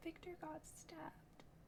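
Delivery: whispered too softly to hear. Answering a worried speaker who cannot hear: whispering too quietly. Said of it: "you're, like, whispering in a way that I cannot hear".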